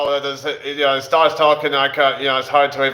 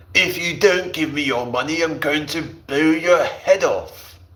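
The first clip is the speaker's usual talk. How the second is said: acted upper-class voice. After saying he can sort of do one, speaker tries a Stewie Griffin impression. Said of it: "like a posh sort of voice".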